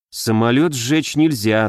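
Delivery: plain reading voice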